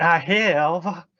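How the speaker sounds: put-on Southern gentleman voice. Repeating another speaker's words back: imitating a southern gentleman accent. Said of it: "You were like".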